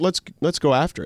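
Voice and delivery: ordinary talk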